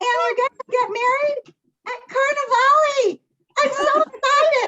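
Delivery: put-on little cartoon mouse voice. Announcing a wedding date to everyone, in a cartoon mouse voice. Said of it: "in that voice".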